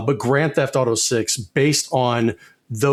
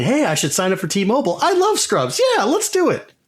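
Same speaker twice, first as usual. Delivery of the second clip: put-on over-eager, swooping, climbing, excited screaming; 10 semitones higher than usual. Retelling a TV commercial, imitating Turk and JD screaming. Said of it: "Turk and J D screaming at me".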